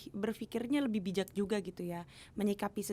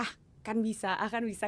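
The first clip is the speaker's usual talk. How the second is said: ordinary talk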